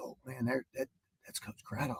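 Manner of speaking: hushed, barely audible, starstruck whisper. Retelling a kid spotting the coach on a school tour: imitating a kid whispering. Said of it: "I heard one of 'em kinda whisper".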